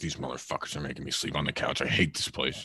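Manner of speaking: low, soft grumbling mutter under the breath. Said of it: "he's under his breath".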